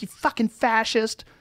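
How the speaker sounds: high, enraged, furious screaming. Retelling a video of a woman and a cop, retelling a woman's furious scream. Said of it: "woman screaming in this cop's face".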